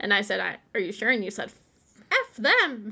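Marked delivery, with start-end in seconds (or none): 2.1-2.9 put-on cartoon voice, much higher pitch. Retelling what the other host said about a former employer: Mickey Mouse voice. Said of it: "I just used a Mickey Mouse voice".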